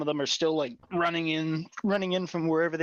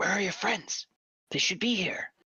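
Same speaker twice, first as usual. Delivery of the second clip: soft, quiet, hushed whisper close to ear; 4 semitones higher than usual. Voicing a woman whispering into the listener's ear, quiet whisper. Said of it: "she just whispers quietly like".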